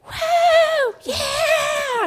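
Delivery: very high, drawn-out, whooping cheer. Retelling how parents at a basketball game were cheering: imitating parents cheering. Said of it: "they're cheering".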